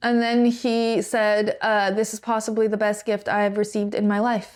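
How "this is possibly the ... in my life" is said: ordinary talk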